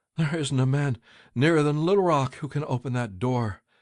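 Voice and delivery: trembling, quavering voice. Narrator reading a man's reply to a frantic mother, shaky voice. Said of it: "in a shaky voice".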